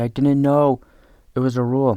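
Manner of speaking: put-on child yelling. Retelling the kid's repeated reply about the rule: imitating a kid yelling.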